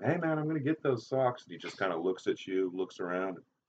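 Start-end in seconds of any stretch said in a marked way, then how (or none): 0.0-1.4 very high, raised, loud shouting voice. Retelling how the listener kept yelling at the keeper leaving the field, imitating someone yelling. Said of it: "you're still yelling at him".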